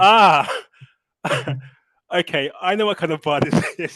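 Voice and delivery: loud, high-pitched laughing delivery.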